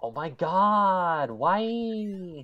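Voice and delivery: high, loud whine, "why" drawn out. Showing others what their so-called whiny voice sounds like, whiny voice. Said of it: "quote unquote whiny voice".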